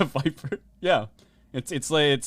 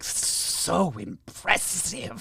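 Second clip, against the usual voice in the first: sultry, flirtatious, seductive snake voice; 4 semitones higher than usual. Voicing a giant snake eyeing a player up and down: seductive snake voice. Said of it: "she looks you up and down and is like".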